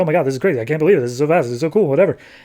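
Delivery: words rattled off in super-speed gabble. Retelling a comic character talking at super speed: imitating super-speed talking. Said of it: "Nelson's just talking at super speed".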